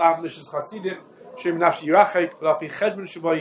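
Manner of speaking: ordinary delivery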